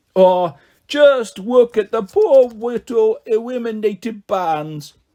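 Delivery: put-on sorrowful baby talk, high and very slow, drawn out. A narrator reads Quark Blisterbum mocking the eliminated bands, in a babyish voice. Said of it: "said in a babyish voice, pretending to look sad".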